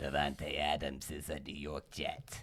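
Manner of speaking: low, slow, bad New York accent.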